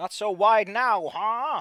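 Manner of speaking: booming, very loud, high, drawn-out shout that keeps rising. A game master voices a character shouting during a point-blank attack: shouting. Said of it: "And he shouts".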